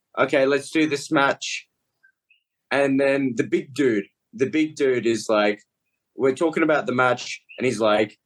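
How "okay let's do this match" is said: ordinary delivery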